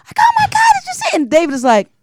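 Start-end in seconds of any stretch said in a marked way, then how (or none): 0.2-1.2 mock shrieking, very high-pitched excited outcry. Retelling screaming out on the bus: imitating own screaming. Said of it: "I'm screaming out on the bus".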